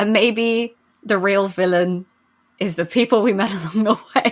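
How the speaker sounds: giggling, laughing through the words. Talking to viewers about a show's character, laughing.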